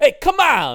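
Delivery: put-on male Brooklyn accent, very high-pitched and very loud. Describing an actor's role in Moonstruck: imitating Nicolas Cage's Brooklyn guy. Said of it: "sort of Brooklyn-y".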